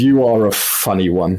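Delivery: amused, chuckling through the words. Voicing a Shadowkai amused by a mortal: chuckling while talking. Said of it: "she chuckles and says".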